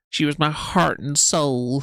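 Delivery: slow Southern drawl leaning hard on heart. Mimicking what Amber kept saying, Amber impression, stress on 'heart'. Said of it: "The emphasis on heart in that way".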